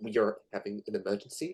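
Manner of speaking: whispering close into an ear. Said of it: "as if he's whispering right into your ear".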